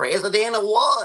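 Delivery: very high, loud Southern country voice. Showing two ways to do a movie line, now the country version: Gomer Pyle country voice. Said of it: "here's the country version".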